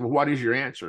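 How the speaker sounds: put-on smug tone. Retelling how a man smugly asked for an answer, retelling a smug question. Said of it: "he's kind of smugly said".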